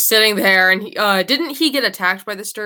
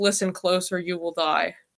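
muttered character voice, much quieter; 3 semitones lower, 7 dB quieter than usual. Narrator voices Glenn as the party hears him muttering under his breath. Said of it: "you hear a mutter under his breath".

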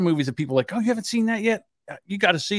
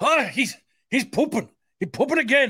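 clumsy fake Irish accent, pitched up; 9 semitones higher than usual. Telling about scrolling TikTok on the toilet, a bad fake Irish accent. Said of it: "Now I'm Irish".

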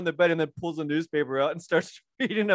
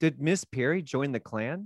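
mock deadpan, quieter and slower; 4 semitones lower, 5 dB quieter than usual. Retelling a scene, the speaker quotes the dad's question, imitating the dad's deadpan. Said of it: "really deadpan".

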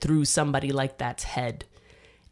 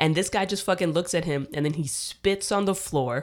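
ordinary delivery

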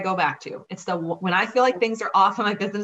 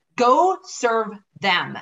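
stern, firm, no-nonsense delivery; 3 semitones higher, 3 dB louder than usual. Retelling what a coaching friend said after a slow month: imitating a stern friend. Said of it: "she was very stern".

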